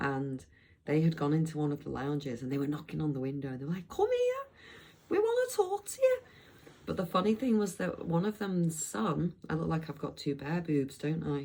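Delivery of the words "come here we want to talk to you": put-on high, loud Scouse accent. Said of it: "sorry about that accent".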